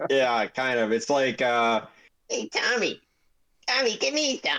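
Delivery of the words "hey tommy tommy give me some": squeaky, very high goblin babble. Voicing overheard goblin chatter, high-pitched goblin voice. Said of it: "chatter in high voices".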